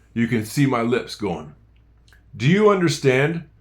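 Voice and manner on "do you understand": run together in one go, no pause. Showing a learner how the question sounds: said straight out with no pause. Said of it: "It's just brrr, straight out".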